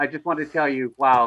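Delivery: ordinary talk, nothing marked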